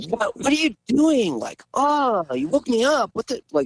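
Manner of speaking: very high, swooping pitch, angry, annoyed outburst. Retelling what she said after being woken by a scream, imitating an angry girlfriend. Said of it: "Kind of like very angry girlfriend kind of vibes".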